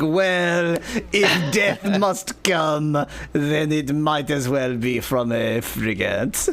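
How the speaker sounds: put-on gloomy, depressive French accent. Voicing a depressive thief in the game: depressive French accent. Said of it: "The depressive thief who's like".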